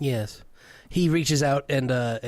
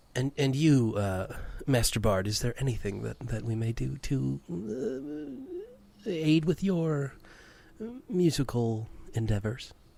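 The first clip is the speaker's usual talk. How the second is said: courtly, very polite, sing-song gracious tone; 4 dB quieter than usual. Voicing a well-dressed man who turns to the bard: very gracious manner. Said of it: "he sort of becomes very gracious".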